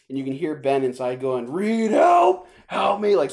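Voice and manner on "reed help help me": very slow, loud, high, drawn-out scream. Retelling a movie scene where a trapped character calls out: imitating Ben screaming for help. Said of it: "screaming for help".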